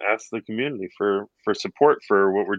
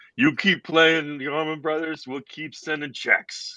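pitched-up, tough-guy gangster voice; 6 semitones higher than usual. Retelling a phone call received a couple of days ago: gangster voice. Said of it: "sounded like a gangster or something".

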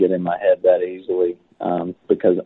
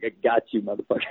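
put-on grinning delivery, quieter and faster; 3 semitones higher, 5 dB quieter than usual. Retelling what a man said while grinning at him, imitating a grinning remark. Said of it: "grins at me like".

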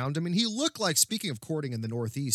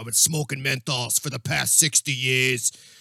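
put-on loud old chain-smoking woman's voice; 5 dB louder than usual. Speaker retells an old woman's remark as she wanders out: E.T. voice. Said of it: "the voice actor of E.T".

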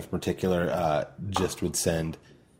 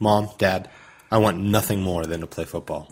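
plain

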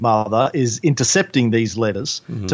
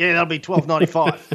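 put-on broad Australian accent, higher pitched; 5 semitones higher than usual. Imitating a store clerk's greeting: imitating a broad australian accent. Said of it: "their accent is broader than mine".

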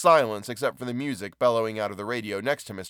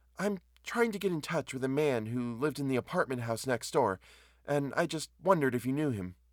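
hesitant, shy, timid, quiet voice; 4 semitones higher, 5 dB quieter than usual. Narrating a story, a woman asks the man at the counter, timidly. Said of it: "she said timidly".

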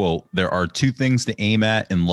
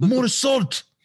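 very high, made-up, put-on Austrian accent. Talking about baking with an austrian voice in your ear, imitating an austrian accent. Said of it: "you hear that Austrian dude just in your ear".

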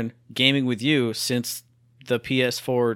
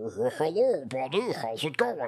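slow, strange, unnatural puppet-like voice; 5 dB quieter than usual. Improvising a squid-puppeted person greeting a buddy, weird-sounding voice. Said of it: "Why do you sound so weird?".

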